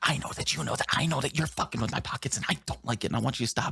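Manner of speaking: whispered speech. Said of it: "whispering to the void".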